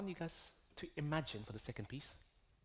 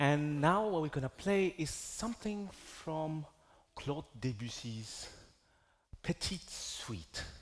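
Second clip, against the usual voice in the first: put-on French accent, Frenchified pronunciation; 6 dB louder than usual. Host introducing the next piece to an audience, in a French accent. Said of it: "How was my French accent?".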